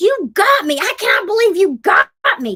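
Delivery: high shrieking at the top of the lungs. Retelling how a woman reacted to an April Fool's prank: imitating someone screaming. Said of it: "She screams to the top of her lungs".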